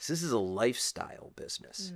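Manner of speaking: acted scornful, disdainful, dismissive tone. Retelling a partner's remark about the business: imitating a disdainful tone. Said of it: "he said it with such disdain".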